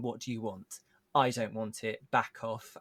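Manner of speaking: plain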